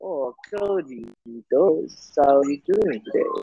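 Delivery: really slow, dragged-out, unhurried drawl. Describing an anime character who talks really slow, doing Kizaru's slow drawl. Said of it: "He talks like this".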